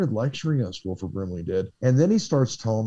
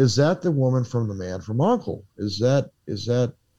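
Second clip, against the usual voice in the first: plain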